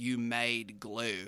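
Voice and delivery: really bad fake Australian accent. Repeating a line randomly while walking around, bad australian accent. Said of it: "my really bad attempt at an Australian accent".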